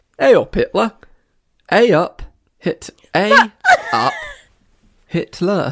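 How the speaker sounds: very high, swooping, sing-song Yorkshire accent. Showing a southerner how a Yorkshireman says the phrase: Yorkshire accent. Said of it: "Like a Yorkshireman".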